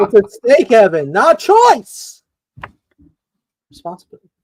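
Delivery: threatening villain character voice. Teased as an evil villain, speaker answers the other speaker: Mark Strong impression. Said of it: "That was Sinestro himself".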